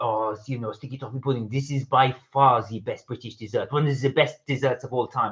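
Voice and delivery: put-on French accent, chef style. Quoting a French chef they watch on YouTube, French accent. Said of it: "I'll do the accent as well".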